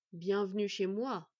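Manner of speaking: deep, cavernous, growling, rumbling voice from far down. A giant wolf greets the visitors: cavernous rumbling voice. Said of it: "leur dit-il d'une voix caverneuse et grondante".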